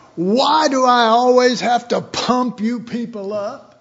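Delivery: fed-up, exasperated scolding tone. Retelling how a pastor spoke to his congregation from the pulpit, retelling a loud outburst. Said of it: "he said with a loud voice".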